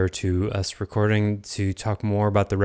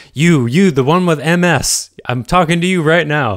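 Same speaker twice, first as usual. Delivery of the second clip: booming, very loud, high televangelist-style preacher voice; 9 semitones higher, 11 dB louder than usual. A podcast host teasingly addresses a listener directly, in a televangelist voice. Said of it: "going to sound like a televangelist. They would say that".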